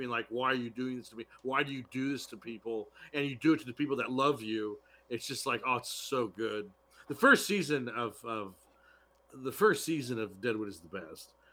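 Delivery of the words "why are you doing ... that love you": put-on tearful, crying, pleading voice, quieter. Retelling a dying priest's monologue from a show: imitating a crying character. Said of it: "just crying".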